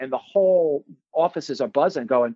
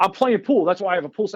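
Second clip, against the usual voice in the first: put-on heated, angry arguing voice, higher pitch; 4 semitones higher than usual. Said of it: "we're arguing like two guys who are gonna fight".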